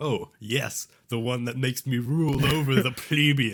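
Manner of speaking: dark, scary villain voice, slow, loud, sinister. Imitating another speaker's answer about power motivation: imitating a dark, scary tone. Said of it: "That sounded very dark and scary".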